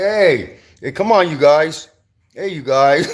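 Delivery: drawn-out plea. Retelling how the tower guard called out during a fight, imitating the tower guard. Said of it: "he's like".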